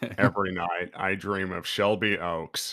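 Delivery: dead-level, flat, affectless, emotionless monotone. Repeating a line with less emotion after the first try: flat monotone. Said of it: "You gotta get that sort of monotone".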